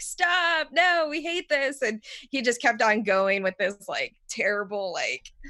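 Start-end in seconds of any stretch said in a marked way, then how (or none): 0.0-1.8 mock disgusted, high, drawn-out scream. Retelling how the players reacted to the DM's disgusting voice in a game: imitating screaming. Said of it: "screaming the whole time".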